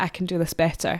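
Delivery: plain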